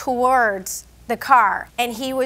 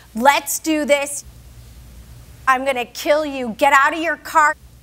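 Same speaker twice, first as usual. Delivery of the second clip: acted-out screaming; 2 semitones higher than usual. Answering questions about a man taunting another, retelling a scream. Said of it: "He was screaming at him saying".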